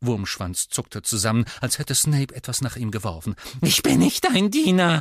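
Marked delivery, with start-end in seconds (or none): 3.6-5.0 squealing, high, loud, squeaky voice. Narrator reads a flinching man's reply to a colleague: squeaking. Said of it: "quiekte er".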